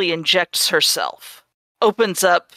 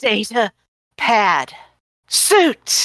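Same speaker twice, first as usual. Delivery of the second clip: rough, harsh, strained throaty voice; 3 semitones higher than usual. Storyteller voicing a woman patting around on her clothes, harsh strained throat voice. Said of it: "in a rather harsh voice that sounds like bad things are happening in her throat".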